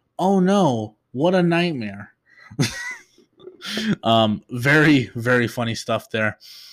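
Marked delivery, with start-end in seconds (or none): 0.2-2.1 sarcastic, high-pitched tone. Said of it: "Toph's sarcasm coming in".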